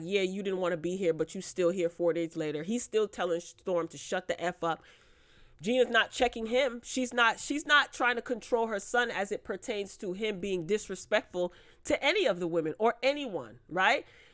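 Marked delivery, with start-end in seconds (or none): 0.0-2.6 mock sly, slick, snide tone. Retelling remarks made during a fight: imitating slick little remarks. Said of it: "making her little slick remarks like".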